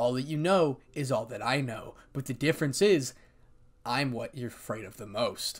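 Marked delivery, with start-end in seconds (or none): none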